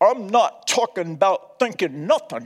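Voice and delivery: put-on deep North Carolina accent. Quoting an unforgettable remark from one of his messages, in Franklin Graham's deep North Carolina accent. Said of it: "He said this in his deep North Carolina accent".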